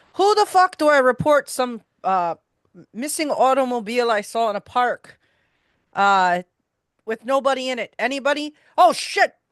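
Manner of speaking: brash, loud, high-pitched calling out. A player's character holds the front door open, calling into the foyer: loudly calling out. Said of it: "holding it open and loudly".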